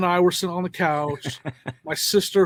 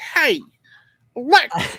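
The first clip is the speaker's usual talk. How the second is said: put-on Virginia accent, higher and louder; 7 semitones higher, 4 dB louder than usual. Imitating a friend asking Alexa to play the podcast: imitating Sonya's Virginia accent. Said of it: "how she was like".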